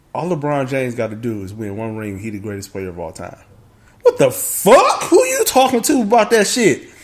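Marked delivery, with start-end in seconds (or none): 0.2-3.4 laid-back, effortless, easy relaxed voice. Retelling what a friend said while playing Madden: imitating a friend's easy relaxed voice. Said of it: "with the easiest relaxed voice".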